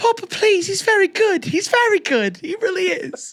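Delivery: put-on very high British fourteen-year-old voice. Mock a texan man pleading with his daddy about a trade, imitating a british fourteen year old. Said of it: "sound like a British fourteen year old".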